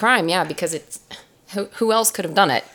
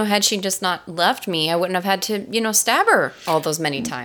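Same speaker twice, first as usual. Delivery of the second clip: plain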